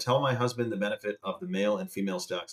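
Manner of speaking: plain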